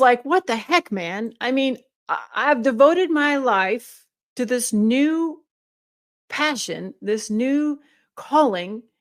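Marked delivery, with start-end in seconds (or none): 0.2-1.3 put-on angry, mad outburst. Retelling being mad that the pain came back: imitating own angry outburst. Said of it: "I was mad".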